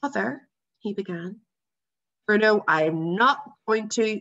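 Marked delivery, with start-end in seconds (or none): 2.3-4.2 irritated, fed-up, irritable tone with raised voice. Father cutting off Bruno's final question: irritable. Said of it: "began Father irritably".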